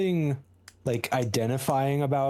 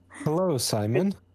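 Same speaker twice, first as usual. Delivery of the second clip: offhand, unbothered, nonchalant and casual; 2 semitones higher than usual. Greeting a man gagged and tied to a chair, nonchalant. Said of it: "I say nonchalantly".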